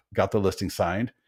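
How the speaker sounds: plain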